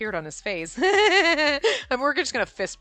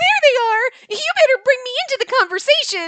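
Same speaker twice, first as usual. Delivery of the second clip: put-on very high, very loud, peppy girl voice; 13 semitones higher, 8 dB louder than usual. Speaker voicing a character, in [name]'s peppy girl voice. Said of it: "It's my peppy girl voice".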